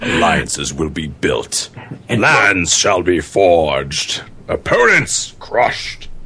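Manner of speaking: deep villain voice. Talking about alliances with friends, switching into a Bane voice. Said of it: "You do it in your Bane voice".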